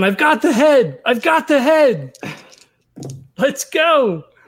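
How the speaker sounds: high, drawn-out scream. Player in a dice game acting out his character, screaming. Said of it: "He's just screaming".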